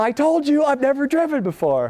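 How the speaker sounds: put-on nice British accent, pitched way up. Quoting a woman who had never driven before, in a British accent. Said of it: "in a nice British accent".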